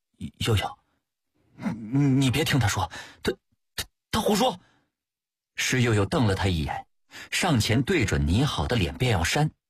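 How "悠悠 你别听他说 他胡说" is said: stammering, much higher. Narrator reads a man stammering to a woman during a quarrel. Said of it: "结结巴巴地说".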